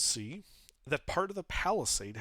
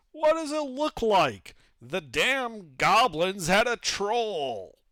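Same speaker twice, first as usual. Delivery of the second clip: loud, high yell, "troll" stretched out; 7 semitones higher, 7 dB louder than usual. Voicing a guard who yells back from behind a door: yelling back. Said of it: "a voice yells back".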